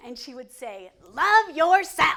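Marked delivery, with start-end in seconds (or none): 1.1-2.2 put-on high, sassy Southern Virginia accent. Retelling a grandmother's advice to women: imitating grandma's Southern Virginia accent.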